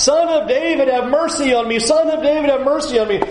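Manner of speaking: put-on man crying out. Retelling how a man in the scripture called out: imitating a man crying out. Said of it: "he's crying out".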